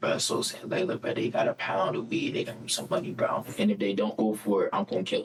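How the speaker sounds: put-on whisper. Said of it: "he whispered in my ear".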